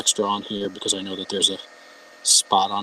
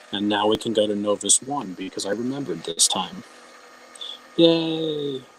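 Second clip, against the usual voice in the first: normal talking voice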